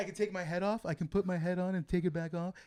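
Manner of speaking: eerie, unsettling, creepy, odd way of talking. Retelling how a man in a show spoke to kids: imitating his creepy way of talking. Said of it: "He talks like this".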